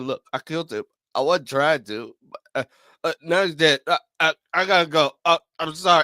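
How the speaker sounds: mock hesitant, halting, drunk-sounding ramble. Retelling what a show character said after a fight, imitating Shapesmith sounding drunk. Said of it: "Are you drunk right now, or are you just talking like this".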